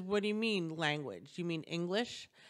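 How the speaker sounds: ordinary delivery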